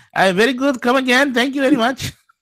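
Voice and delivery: very high, cartoonish Indian accent. Greeted as Apu and asked how you are, answer in an Apu voice. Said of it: "How are you, Apu?".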